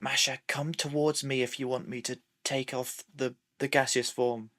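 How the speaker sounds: hushed half-whisper with no voice at all. Speaking in character, half-whispering to the other character. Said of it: "I'm going to whisper".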